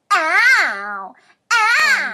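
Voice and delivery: mocking ow.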